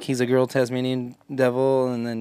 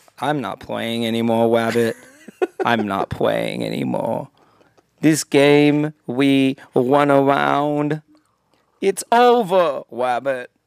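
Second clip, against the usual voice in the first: loud, raised, totally beaten, hopeless cartoon lament; 5 dB louder than usual. Acting out a dark cartoon scene, doing a mock-hopeless Elmer Fudd voice. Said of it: "the most depressed like hopeless oh Elmer Fudd".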